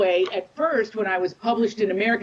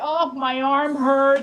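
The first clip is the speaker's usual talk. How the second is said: complaining, slow, drawn-out motherly voice; 4 semitones higher than usual. Retelling what mother said when the sons walked in: impression of mother. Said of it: "I'm gonna do an impression of my mother".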